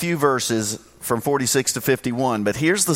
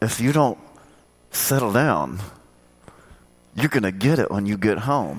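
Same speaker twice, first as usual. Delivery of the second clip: put-on speech through clenched teeth, lower; 4 semitones lower than usual. Recalling your mother warning you, imitating her talking through her teeth. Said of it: "talking through her teeth".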